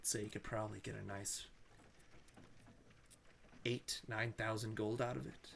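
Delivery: quiet whisper. Voicing the checker, who whispers to a player so others can't hear: whispering in character. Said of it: "He starts whispering to you".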